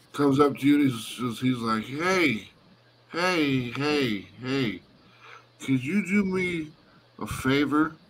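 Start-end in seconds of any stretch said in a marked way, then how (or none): 1.9-8.0 mock drunk, very slow, drawn-out drawl. Voicing a fellow cleric asking a player for a favor: acting drunk. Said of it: "drunk as hell".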